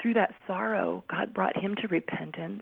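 choked-up voice right on the edge of crying. Telling of a man's conversion after his family's loss, about to cry. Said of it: "I'm going to cry".

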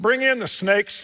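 very high, loud yell. Retelling how a son yelled to the other officer: imitating someone yelling. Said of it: "He yells to his guy".

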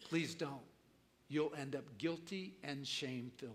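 quiet, soft, hushed half-whisper. Contrasting the flesh and the Spirit, voicing the Spirit; half-whispering. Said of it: "And the Spirit whispers".

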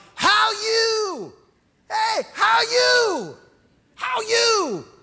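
very high, very slow, loud, drawn-out. Retelling how a store employee greeted customers: imitating a loud greeting. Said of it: "greet you with a loud".

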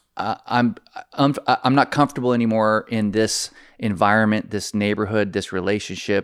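ordinary talk

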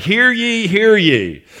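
slow, high-pitched town crier's proclaiming voice. Acting out a herald reading a scroll to the gathered town: herald reading a royal proclamation. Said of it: "he reads the scroll to everybody gathered".

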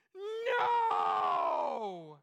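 acted wailing cry. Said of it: "it was a wailing no".

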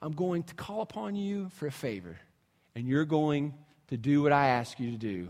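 rough, raspy, hoarse voice. Retelling what a man once said to him, in a raspy voice. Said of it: "he's kind of got the raspy voice".

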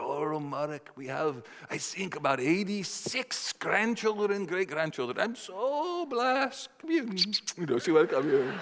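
put-on high Dutch accent. Retelling his grandmother's answer to his question, in a put-on dutch accent. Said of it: "she said in this sort of Dutch accent".

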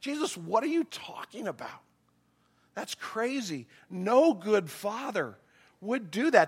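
mock incredulous tone. A speaker acts out the disciples answering jesus, acting out incredulous disciples. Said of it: "the incredulous look on the disciples' face".

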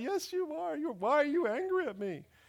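put-on very high, weepy, crying little-kid toddler voice. Parent retelling his three-year-old son's reply, imitating a crying child. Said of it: "And he started crying".

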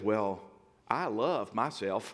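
light southern drawl, very slow. Retelling a quiet man suddenly speaking up out of nowhere, Ben's little southern drawl. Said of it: "in a little southern drawl".

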